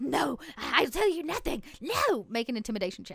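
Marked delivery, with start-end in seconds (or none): 0.0-1.6 shocked and panting, higher, slower. Game master voicing a character who has just woken, shocked and panting. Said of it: "wakes up with that like shock and panting".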